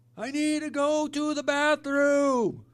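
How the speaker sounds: very high, drawn-out yell over loud music. Retelling trying to talk over loud music: imitating himself yelling. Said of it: "I just hate having to yell like that".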